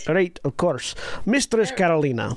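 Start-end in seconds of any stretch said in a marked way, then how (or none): 1.3-2.4 put-on Scottish accent gradually slipping into a Russian accent. Voicing a character addressing a player, Scottish accent slipping into Russian. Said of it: "it went right back to Russian".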